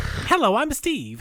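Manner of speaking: put-on kraken monster voice. Showing how the kraken character will talk: Steve the Kraken voice. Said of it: "No, more like a".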